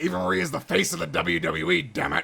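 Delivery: rough, creaky, rasping put-on voice. Reading a line someone wrote, Vince McMahon voice. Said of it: "I had to say it in my Vince McMahon voice".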